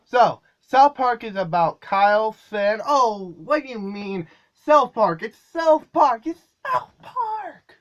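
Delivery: lively, pumped-up, loud and rising. Trying the show description again, this time with more energy. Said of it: "let's try a little bit more energy".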